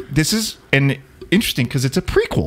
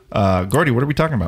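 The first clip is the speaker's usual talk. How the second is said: plain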